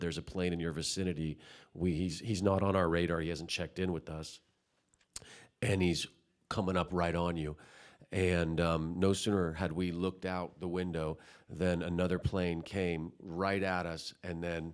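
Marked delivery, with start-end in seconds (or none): none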